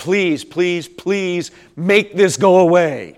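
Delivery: mock, desperate, pleading, repeated begging. Recalling past times of praying to god, retelling begging god. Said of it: "I begged God".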